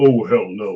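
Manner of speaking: deep, low actor's speaking voice. Retelling how Tony Todd turned down going ghost hunting: imitating Tony Todd's deep voice. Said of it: "you know that deep voice he's got".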